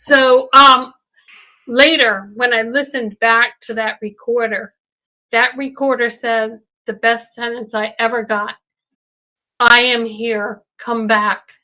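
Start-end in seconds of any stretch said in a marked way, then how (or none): 9.6-11.4 flat, lifeless monotone, slower. Retelling what a voice on the recorder said, in a flat soulless monotone. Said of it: "it was very monotone, very without a soul".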